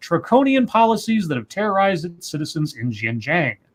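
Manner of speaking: ordinary talk, nothing marked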